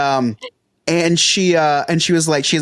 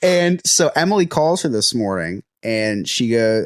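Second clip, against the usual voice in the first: normal talking voice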